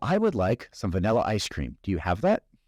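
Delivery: ordinary talk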